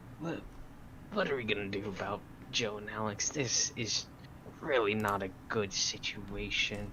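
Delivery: hushed, whispered speech. A player's character goes over to two companions, whispering. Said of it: "I am whispering".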